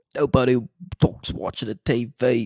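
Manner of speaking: put-on British accent. Speaker quoting an Australian man's saying, in a British accent. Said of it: "that's British. That's not Australian".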